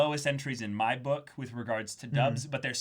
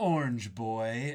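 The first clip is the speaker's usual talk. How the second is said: mocking put-on anime villain voice. Quoting an anime scene where a character is mocked: Lelouch's mocking delivery. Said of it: "the way, uh, Johnny Young Bosch delivers it as Lelouch".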